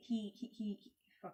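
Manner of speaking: stuttering, stuck repeating "he". Describing a man's younger days, stuttering. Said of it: "I'm stuttering".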